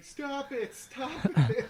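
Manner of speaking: very loud, very slow, drawn-out, high shout. Retelling what a lady on the sideline of a basketball fight did: imitating someone shouting. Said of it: "just shouting".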